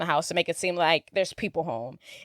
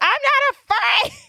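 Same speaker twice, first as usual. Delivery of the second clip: mock shrill shouted yell, pitched way up; 4 dB louder than usual. Retelling a movie scene where Kevin goes outside: imitating Kevin yelling. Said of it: "he yells".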